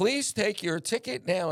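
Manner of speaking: put-on sexy, sultry, seductive voice with an English accent. Describing what a parking-gate machine says, imitating a sexy English voice. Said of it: "in a really sexy English voice".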